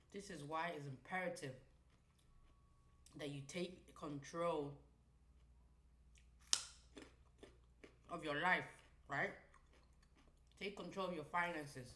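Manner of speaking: talking with mouth full, chewing. Speaker addressing listeners while eating, talking with mouth full. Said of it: "let me stop chewing. ... Talk with my mouth full".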